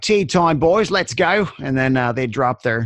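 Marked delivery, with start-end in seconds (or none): 0.0-1.5 rough Cockney voice, pitched up, called out. Recalling london construction workers calling a break, rough cockney accent. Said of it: "these rough Cockney accented like builders would be like".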